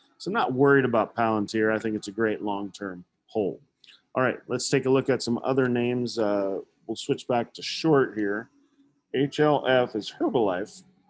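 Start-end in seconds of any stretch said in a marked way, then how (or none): 9.2-10.8 breaking, cracking voice, very drawn out and slow. Going through stock tickers for viewers, voice cracking. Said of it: "my voice cracked there".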